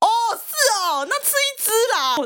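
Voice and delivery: high shout calling from a long distance. Recalling the speaker's brother answering from a distance, retelling a shout from afar. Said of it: "我哥就在远方大喊".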